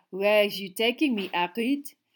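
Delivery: light, teasing, playful. Walking with a companion, a woman asks where he is taking her, playful. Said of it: "she said playfully".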